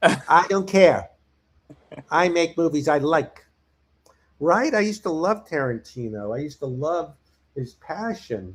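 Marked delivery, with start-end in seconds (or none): 0.0-3.4 put-on arrogant voice. Mocking a director as becoming a grumpy jerk: imitating Tarantino being arrogant. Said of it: "He's becoming".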